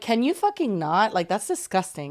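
usual speaking voice

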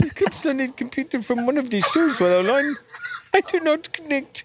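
put-on Indian accent. Reading a message aloud when asked to: put-on Indian accent. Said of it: "with an Indian accent?".

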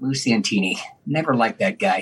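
low, quiet mumbling under the breath. Retelling what a stranger at the Rock Hall said looking at him, imitating a stranger mumbling. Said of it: "looks at me and mumbles".

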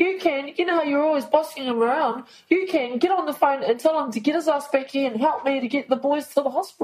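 high-pitched, furious, out-of-control rant. Retelling a phone call asking for help getting the boys to hospital: imitating own angry outburst. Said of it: "I lost it at her".

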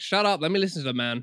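plain

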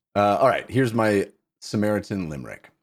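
ordinary talk

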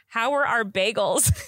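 mock yelling in a put-on voice. Retelling how mom yelled back at the camper: imitating mom yelling back. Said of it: "And then my mom yelled back".

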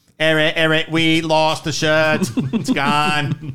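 put-on Boston accent. Joking with the others about something lost, the speaker speaks in a boston accent. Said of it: "That Boston accent".

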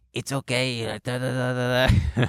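hoarse, rasping, raspy consoling voice. Retelling how a kid comforted someone crying: imitating Diego's raspy voice. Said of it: "who had a raspy voice".

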